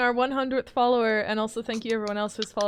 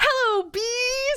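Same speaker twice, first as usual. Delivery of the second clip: acted abrupt blurted shout, very high-pitched; 13 semitones higher than usual. Retelling how a partner blurted a greeting in a park: imitating a sudden loud outburst. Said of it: "Ben just fucking bursts out with".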